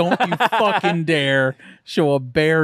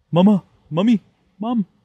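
put-on high-pitched cartoon baby voice; 5 semitones higher, 3 dB louder than usual. Asked for their best Stewie, the speaker answers in a Stewie voice. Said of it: "Give me your best Stewie".

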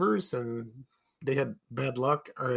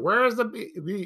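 put-on high demanding yell that breaks off; 7 semitones higher than usual. Retelling a commercial where Clara Peller yells at a drive-thru: imitating Clara Peller yelling. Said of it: "she's yelling".

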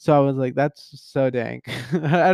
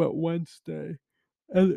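yawning, quieter; 3 semitones higher, 5 dB quieter than usual. Catching the listener up on her week late in the evening, yawning. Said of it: "I'm yawning".

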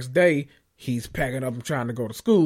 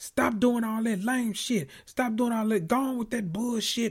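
high, raw, screaming rant; 9 semitones higher, 5 dB quieter than usual. Retelling a recorded phone call: imitating someone screaming. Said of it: "he's screaming".

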